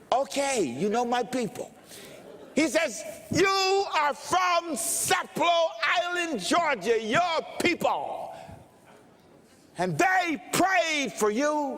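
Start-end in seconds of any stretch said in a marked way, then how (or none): 3.3-11.8 screamed, high, fervent, loud yelling. Retelling an older man naming his family: imitating a man screaming. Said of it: "He's yelling, he's screaming".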